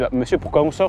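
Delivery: normal talking voice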